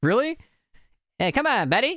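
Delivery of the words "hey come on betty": Canadian accent, pitched very high. Speaker, told their judge accent sounds like South Park, South Park Canadian accent. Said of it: "Canadian's accent".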